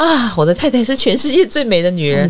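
ingratiating, fawning, flattering buttering-up tone. Retelling how the father praises the mother: imitating a fawning tone. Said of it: "我爸都会用很谄媚的口吻说".

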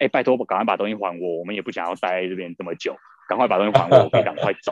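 ordinary delivery

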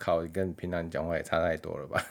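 ordinary talk, nothing marked

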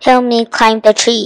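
ordinary delivery, nothing marked

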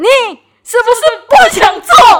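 sudden very loud, high, shrill angry outburst. Retelling how he suddenly blew up at the speaker: mock-angry outburst. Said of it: "他突然大爆气对我说".

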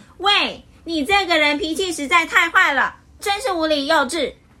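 loud, high-pitched shouting. Narrator reading one character answering another back, said loudly. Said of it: "他也大声说".

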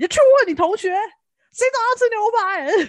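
play-acted, high-pitched, fast, furious scolding tirade. Retelling how a mother scolded her daughter about steak breakfasts: imitating an angry mother. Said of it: "她就很生气".

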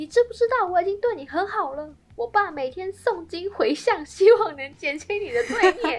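put-on, shrill, very high bellowing shout. Recounting what he yelled at you during a quarrel, retelling a shout. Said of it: "他还大吼".

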